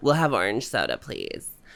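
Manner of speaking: put-on vocal fry voice. Repeating a café order as a joke: Kardashian impression. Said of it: "is this a good Kardashian impression?".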